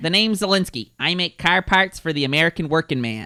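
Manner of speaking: put-on Chicago accent. Showing off accents to the group, in a put-on Chicago accent. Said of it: "Do you like my Chicago accent?".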